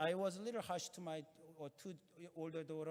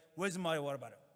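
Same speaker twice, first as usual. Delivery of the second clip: loud, angry, accusing, blaming tone; 6 dB louder than usual. Retelling a son's demand in the car: imitating an angry, blaming tone. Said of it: "he was very angry tone and blaming".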